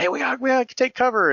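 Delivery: mock very high, loud, shrieking scream. Retelling a wife's night warning to take cover: imitating someone screaming.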